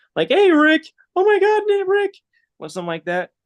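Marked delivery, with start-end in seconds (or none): 0.3-2.2 put-on very high, loud teen voice cracking upward. Explaining his technique, the speaker does his best Morty impression. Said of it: "do my best impersonation of a prepubescent team, like teen".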